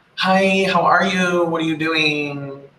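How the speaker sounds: exaggerated, over-the-top valley girl voice. Illustrating small-talk pleasantries, in an exaggerated valley girl voice. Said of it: "not everybody sounds like a valley girl".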